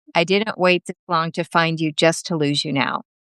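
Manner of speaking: ordinary talk, nothing marked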